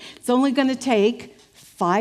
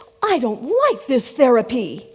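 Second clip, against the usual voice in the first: mock-offended, very indignant tone; 4 dB louder than usual. Telling a joke, the woman in therapy answers her therapist, mock-indignant. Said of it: "she's very indignant at this point".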